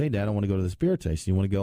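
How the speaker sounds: usual speaking voice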